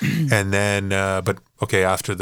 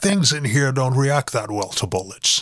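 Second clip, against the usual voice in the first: put-on Scottish accent, pitched high; 6 semitones higher than usual. Quoting a line from Red October: Sean Connery impression. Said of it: "That's my Sean Connery".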